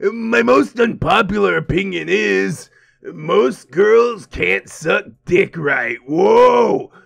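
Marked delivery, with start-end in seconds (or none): 0.0-6.0 rough, creaky put-on voice. Reading a guy's chat message aloud: Party Demon voice. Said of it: "Maybe Party Demon voice?".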